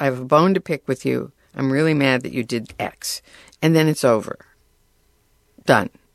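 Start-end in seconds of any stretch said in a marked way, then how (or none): none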